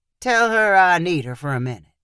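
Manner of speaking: plain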